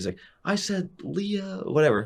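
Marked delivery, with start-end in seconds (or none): 0.4-1.6 shrill, very high, drawn-out scream. Recounting getting up to the line while a player screamed at you: imitating someone screaming. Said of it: "He's screaming at me".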